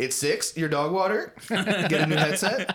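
put-on loud, very high, very slow kid drawl. Acting out a kid answering a teacher: imitating a kid gamer answering a teacher. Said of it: "They're like".

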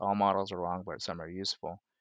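ordinary talk

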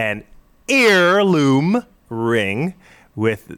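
loud, very slow, very drawn-out yelling. Reading out a story about objects found in fish: yelling. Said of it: "sorry, I yelled there".

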